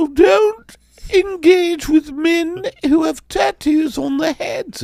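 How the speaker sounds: very high-pitched put-on English accent. Retelling what his mother said to him, imitating her English accent. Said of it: "Why are you talking in an English accent".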